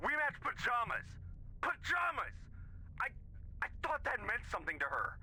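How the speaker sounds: very high, frantic, rushed panicking. Telling a listener about a matching doll, who says calm down: panicking. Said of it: "Calm down. Take a deep breath".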